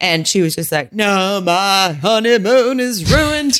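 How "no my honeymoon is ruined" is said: put-on very slow, high southern lady drawl. Retelling what a woman said when leaving her honeymoon, in a southern lady voice. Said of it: "That's my southern lady voice".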